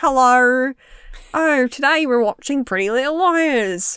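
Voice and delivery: bad Australian accent. Asked to try a New Zealand accent, speaker attempts a failed Australian accent. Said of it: "Australian accents are now just gone".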